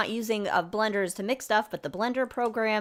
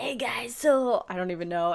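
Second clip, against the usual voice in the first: put-on laid-back, relaxed voice. Asked to host in the Keanu voice, trying it out: Keanu Reeves impression. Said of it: "in that voice, the Keanu voice".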